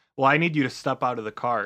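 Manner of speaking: normal talking voice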